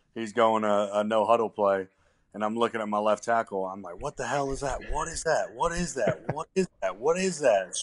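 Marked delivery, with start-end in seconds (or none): 4.0-7.8 screamed, high and urgent. Recalling a confusing no-huddle play, yelling at his left tackle: retelling own screaming. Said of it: "Screaming at him".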